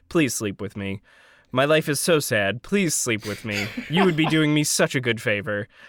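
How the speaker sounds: put-on earnest, dead-serious, low, straight-faced delivery. Retelling a character's pickup line to a woman: imitating Senor Chang's straight-faced plea. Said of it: "with a straight face and he just says".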